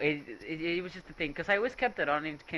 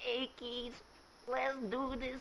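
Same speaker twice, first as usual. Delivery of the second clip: put-on very hushed, high, very old lady voice; 7 semitones higher, 10 dB quieter than usual. Describing a very old woman from class, the speaker does her old lady voice. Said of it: "like with the like old lady voice, super old lady".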